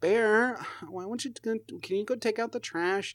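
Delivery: very high-pitched, whining, whiny voice. Retelling their mom's request, imitating her whiny voice. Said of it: "She has that whiny, like, voice".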